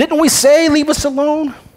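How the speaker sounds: high, heavily sarcastic mock grumbling gripe. Reading the Israelites' complaint to Moses aloud: acting out sarcastic complaining. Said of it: "They're being very, very sarcastic".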